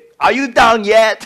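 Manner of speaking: shrill, very loud, high, annoyed shouting. Retelling shouting back at the GPS after a wrong turn: retelling a shout at a machine. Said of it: "I just shout at the machine".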